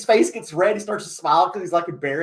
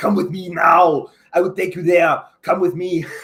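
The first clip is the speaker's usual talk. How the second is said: mocking put-on movie-star voice, louder; 5 dB louder than usual. Imagining him coming to the disciples fishing with one of his sayings, mocking Arnold Schwarzenegger impression. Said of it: "made fun of Arnold Schwarzenegger".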